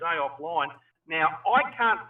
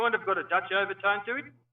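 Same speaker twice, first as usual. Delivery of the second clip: South African English accent. Comparing accents with others, the speaker demonstrates a South African accent. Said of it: "South African tends to sound like this".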